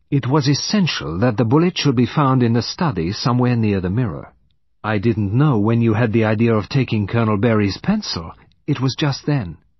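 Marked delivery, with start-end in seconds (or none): none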